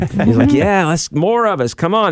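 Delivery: high, eager, excited put-on dog voice.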